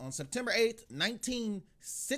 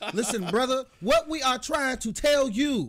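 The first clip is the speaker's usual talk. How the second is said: forceful, very loud, higher-pitched militant voice; 10 semitones higher, 11 dB louder than usual. Told they should have done it militant, speaking in a forceful militant voice. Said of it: "You should have did it in a militant voice".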